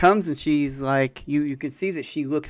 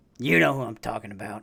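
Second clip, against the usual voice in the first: put-on deep manly voice, much quieter; 5 semitones lower, 3 dB quieter than usual. Acting out a conversation with Sasha, in a very deep manly voice. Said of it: "in the very deep, manly voice".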